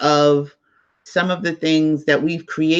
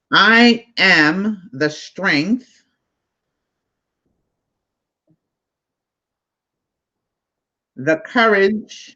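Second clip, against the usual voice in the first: slow, measured, deliberate reading-aloud delivery; 3 semitones higher than usual. Reading a text aloud to a group so everyone can get it: reading slowly. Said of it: "I'm gonna read it slow so everybody can get it".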